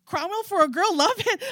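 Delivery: very high-pitched, thrilled, excited shouting. Dee Dee, on the phone while chasing her rolling cart, excited yelling. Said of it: "I'm yelling because I'm excited for you".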